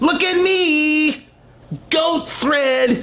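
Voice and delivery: thirsty influencer voice, very high, very slow, "me" drawn out. Mocking how a caption reads to them, the speaker voices it; thirsty Instagram model voice. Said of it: "a thirsty Instagram model that's like".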